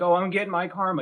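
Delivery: put-on crying. Mocking practitioners who get stressed out: mock crying. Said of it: "So they get stressed out and cry like".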